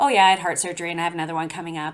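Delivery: put-on offhand delivery. Interviewer echoes the guest's words back, mimicking a nonchalant tone. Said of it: "you just say it so nonchalantly".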